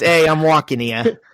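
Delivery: put-on New York accent. Showing their own version after the other speaker's, in a new york accent. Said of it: "mine's just".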